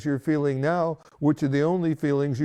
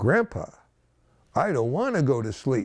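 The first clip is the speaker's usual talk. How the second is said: firm, forceful, assertive tone, swooping pitch; 2 semitones lower than usual. Retelling a granddaughter refusing to go to sleep: imitating a strong assertive voice. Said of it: "in a very strong and assertive voice".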